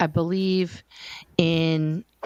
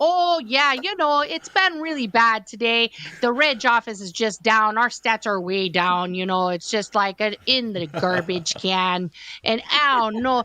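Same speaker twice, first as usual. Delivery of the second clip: put-on chatty, pitched-up Midwest accent; 5 semitones higher than usual. Retelling a back-and-forth chat, imitating how they talked. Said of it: "we would talk to each other like this".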